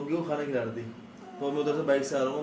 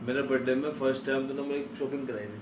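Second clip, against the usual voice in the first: ordinary talk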